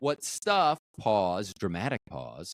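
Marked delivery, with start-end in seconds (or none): 0.0-0.8 strong emphasis punched onto the word stuff. Recounting their own earlier reply to someone: stress on stuff. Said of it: "I did stress that word".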